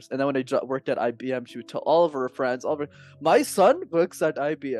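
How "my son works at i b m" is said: put-on very slow, drawn-out Indian accent. Son imitating his mother talking to her friends, in her indian accent. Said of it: "in her Indian accent".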